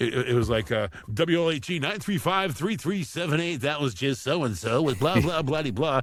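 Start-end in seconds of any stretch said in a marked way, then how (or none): 1.1-6.0 big classic eighties radio DJ announcer patter. Recalling working behind the mic in the eighties: big 80s radio DJ voice. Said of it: "it was radio voice back then because the eighties was all about the big radio voice".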